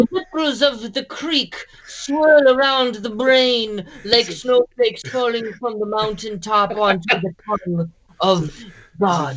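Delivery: put-on German-accented director voice. Someone has just asked you to show how Herzog talks; do a Werner Herzog impression. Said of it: "Herzog talks like this".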